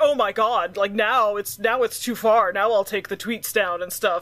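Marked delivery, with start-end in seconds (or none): none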